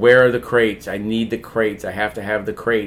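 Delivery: ordinary delivery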